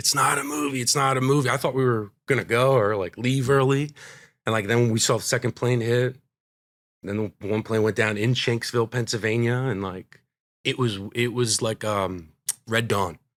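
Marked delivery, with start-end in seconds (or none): 0.0-1.5 mock screamed, loud, said twice over. Retelling a mother watching the TV news: imitating someone screaming.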